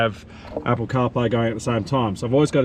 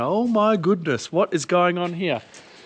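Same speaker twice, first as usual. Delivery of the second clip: mock high, panicked cry of alarm; 7 semitones higher than usual. Retelling seeing smoke from the bonnet: imitating own panicked outburst. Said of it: "And I'm panicking, going".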